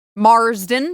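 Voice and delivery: loud American accent, r clearly sounded. Saying a surname so listeners hear the R, in an American accent. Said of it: "I have to say it with an American accent so they know that there's an R in there".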